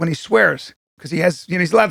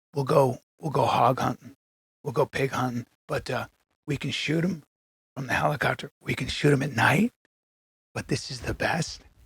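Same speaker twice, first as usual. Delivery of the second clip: put-on completely earnest, dead serious tone; 5 semitones lower, 9 dB quieter than usual. Retelling a friend's hunting offer in his words: imitating Tim, dead serious. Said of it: "he looks at me with all seriousness".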